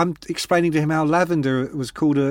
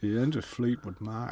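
smooth put-on accent, lower and quieter; 5 semitones lower, 11 dB quieter than usual. Retelling what a man said, in a voice sounding like Sean Connery. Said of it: "you sound like Sean Connery".

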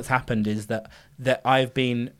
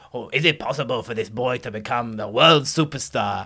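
awful put-on Eastern European accent; 2 semitones lower than usual. Describing a film trailer with the colonel: Tom Hanks's awful accent impression. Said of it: "him doing his awful accent".

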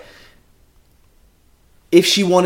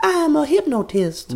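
put-on high-pitched voice in a deep south accent. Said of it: "I'll stop doing the accent".

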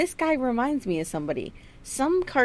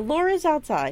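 usual speaking voice

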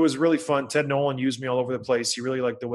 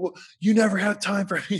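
pitched-up, aggrieved yelling; 7 semitones higher than usual. Retelling a rushed goodbye with his wife: imitating his wife yelling. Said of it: "just yelling at me".

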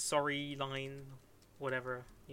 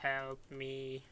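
put-on robotic voice. Telling a story, voice a human waking in a tank in a Dalek voice. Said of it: "in a Dalek voice say".

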